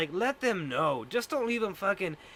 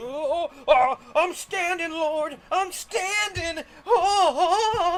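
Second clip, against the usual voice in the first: overplayed cry, very high, very slow, drawn out; 9 semitones higher, 7 dB louder than usual. Retelling a fake paralyzed person standing up: imitating a fake-healed paralyzed person. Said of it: "And then they'd be like".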